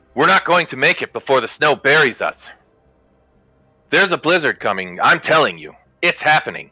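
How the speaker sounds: heated, insistent and angry, pitch pushed up. Voicing a caravan member arguing back: angry retort. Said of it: "Nevin fires back angrily and says".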